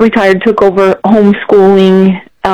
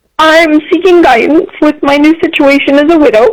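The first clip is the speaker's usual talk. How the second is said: voice full of feeling, higher; 8 semitones higher than usual. A caller speaking to Dave after thanking him for taking the call, emotional. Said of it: "I'm sorry, I get so emotional".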